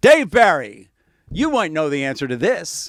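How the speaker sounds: booming, loud, projected voice. Retelling Ted Koppel addressing him on a train; booming Ted Koppel voice. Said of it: "in this booming Ted Koppel voice".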